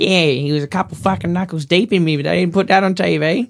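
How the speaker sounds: put-on Australian bogan accent. Retelling what a woman said about not putting something on TV, in a Bogan voice. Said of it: "whenever you guys do the Bogan voice".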